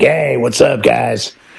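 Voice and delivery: rough, hoarse, hyped-up club DJ voice. Recalling a night of DJing in a club: imitating a club DJ hype voice. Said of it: "your voice is so hoarse from going like".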